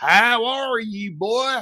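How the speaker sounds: very slow, thick, weird Southern Mississippi drawl. Describing how people from Mississippi talk, thick, weird, slow Mississippi accent. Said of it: "an incredibly thick, weird, slow accent".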